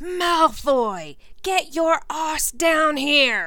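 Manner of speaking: full, loud, high bellowing shout. Harry cups his hands like a megaphone and calls malfoy down to the pitch, bellowing. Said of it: "and bellowed out".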